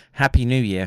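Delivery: normal talking voice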